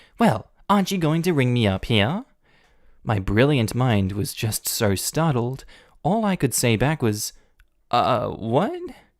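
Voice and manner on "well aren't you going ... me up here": the nastiest, really nasty tone. Retelling what a woman said to them after the cashier left, imitating a nasty voice. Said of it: "in the nastiest voice goes".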